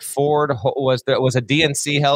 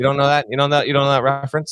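ordinary talk

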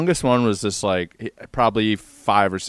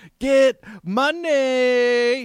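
shrill sudden very high shout, "money" drawn out; 14 semitones higher than usual. Retelling a young kid shouting from a tree stump: imitating a kid yelling. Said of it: "he just yells".

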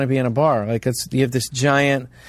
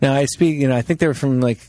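plain

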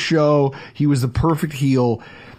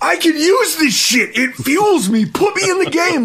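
very high, shrill, loud yelling; 12 semitones higher than usual. Describing a man who loved the crowd's boos, retelling Kenny Powers yelling. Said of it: "he's like yelling at the manager".

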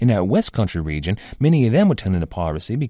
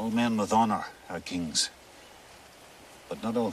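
Scottish accent, much quieter; 11 dB quieter than usual. Showing how a scottish pirate would have sounded, in a scottish accent. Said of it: "A Scottish would have sounded a little something like this".

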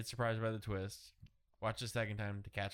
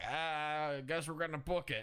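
deliberately bad put-on New York cabbie accent; 6 semitones higher than usual. Giving cancer a voice as a character, in a crappy New York cabbie accent. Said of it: "That's my impression of cancer. That's the voice. I was like, a really crappy New York cabbie".

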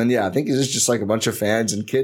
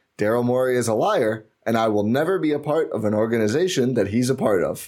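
ordinary talk

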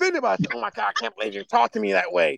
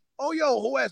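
laughing while talking, higher and quieter; 5 semitones higher, 4 dB quieter than usual. Retelling how a brother answered a call: imitating someone laughing while talking. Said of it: "he busts out laughing like".

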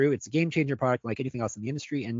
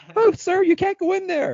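put-on very high, very loud cracking teenage squeak; 8 dB louder than usual. Imitating the teen going through puberty with various jobs in Springfield: Simpsons puberty teen impression. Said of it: "I'm sounding like that teenage kid from The Simpsons... going through puberty".

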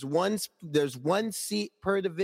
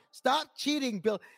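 put-on yelling voice, higher pitch; 6 semitones higher than usual. Retelling watching the game at twelve: imitating own past yelling. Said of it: "I'm yelling".

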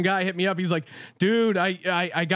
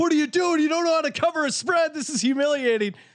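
put-on, high, exasperated screaming; 8 semitones higher than usual. Speaker recalls losing a bet on puppies, reenacting own screaming at them. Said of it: "I'm sitting there screaming at the puppies like".

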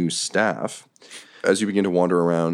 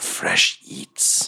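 monster creature voice. Game storyteller voicing a Nothic looking down into a chasm, Nothic monster voice. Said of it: "the Nothic kind of comes back out, looks down into the chasm and goes".

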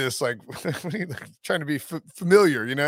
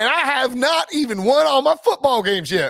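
high, laid-on fake Southern accent; 9 semitones higher, 4 dB louder than usual. Retelling a coach's introductory speech at a basketball game: imitating Brian Kelly's fake Southern accent. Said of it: "his family in that accent".

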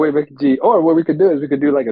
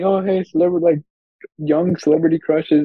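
ordinary delivery

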